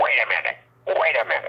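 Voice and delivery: rough, gravelly voice, calling out. Retelling Nina calling out from her office window as he left, gravelly voice. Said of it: "I hear this gravelly voice call out".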